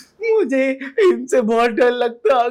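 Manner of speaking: fake childish wailing, high and loud like spoiled kid.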